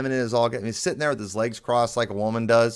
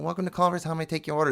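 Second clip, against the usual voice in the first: high, effeminate-sounding voice; 5 semitones higher, 4 dB quieter than usual. Retelling how restaurant workers took the order, imitating effeminate-sounding workers. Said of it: "They sounded so effeminate".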